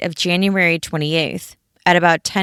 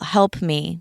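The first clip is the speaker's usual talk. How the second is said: usual speaking voice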